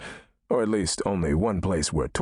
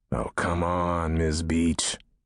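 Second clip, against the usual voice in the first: low, fed-up growl. Narrator replies to miss beach in first person, growling. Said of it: "I growled".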